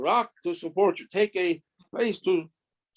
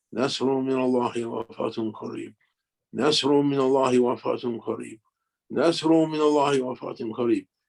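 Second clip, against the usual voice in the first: imitated mutter under the breath, lower pitch; 6 semitones lower than usual. Recalling a man climbing to a lectern before a huge crowd, imitating muttering under breath. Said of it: "saying under his breath".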